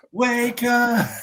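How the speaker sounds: mock very high, loud yelled shout. Repeating a movie line after being asked: imitating a shout of wake up. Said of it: "Do it again".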